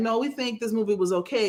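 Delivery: normal talking voice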